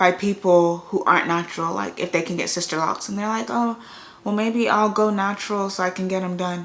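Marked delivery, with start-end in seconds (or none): none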